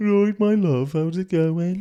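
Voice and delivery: put-on Birmingham accent of an older local person. Showing how an older person from birmingham sounds: birmingham accent of an older person. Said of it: "try and do a Birmingham accent".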